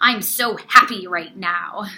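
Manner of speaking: furious, very loud angry shouting. Showing how a reader's tone can clash with the words; angry voice. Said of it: "saying you're really happy but in an angry voice".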